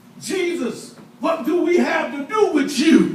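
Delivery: high, hollered outcry. Retelling a demon crying out to jesus: retelling a demon hollering. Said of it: "He hollered out".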